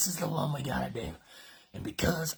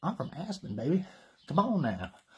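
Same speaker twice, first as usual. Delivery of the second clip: put-on Alabama-style southern country accent; 3 semitones higher than usual. Retelling what he tells girls he meets: southern accent. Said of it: "I picked up on so many girls using this accent".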